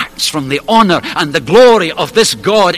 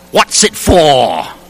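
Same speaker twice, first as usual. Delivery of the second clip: put-on English accent with questioning tone. Quoting an Englishman's third question, in an attempted English accent. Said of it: "so I'll try his accent".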